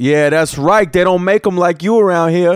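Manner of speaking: put-on very loud voice. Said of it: "very, very loud".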